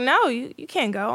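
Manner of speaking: plain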